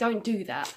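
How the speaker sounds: quite aggressive, disapproving voice. Retelling how the parent shouted at the daughter: imitating a disapproving, aggressive tone. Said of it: "in a kind of disapproving, quite aggressive tone".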